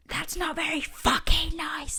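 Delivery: put-on slow, high, drawn-out screaming banshee. Retelling a ghost story, quoting the banshee at the window: imitating a banshee screaming. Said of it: "she's screaming at this girl".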